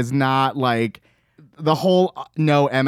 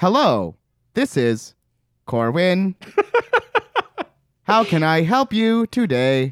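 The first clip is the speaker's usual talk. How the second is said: stilted robot-like voice, very slow, each word dragged out; 6 semitones higher than usual. Describing how Corwin answers the phone, the speaker imitates him: Corwin's robot-like phone voice. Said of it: "he sounds like a robot".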